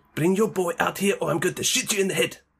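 put-on South African-accented voice. Speaker quotes a line from the film District 9, in a South African accent. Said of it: "That's District 9... South Africa".

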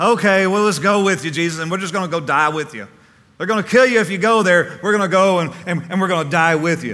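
loud, sarcastic grumbling.

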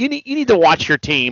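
ordinary talk, nothing marked

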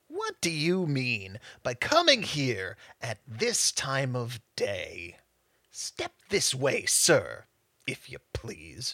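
low, quiet, gruff growling voice. Reading the story, a man at his stool speaks up: growling voice. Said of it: "he growled most convincingly".

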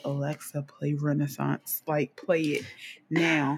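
quiet, hushed half-whisper. Retelling asking Alexa to play the album late at night: imitating own half-whisper. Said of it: "I had to whisper that".

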